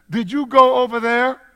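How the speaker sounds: pitch rising and staying up on there. Showing how a question sounds at its end, voice rising on there. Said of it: "when you ask a question, you let your voice stay up at the end of the sentence".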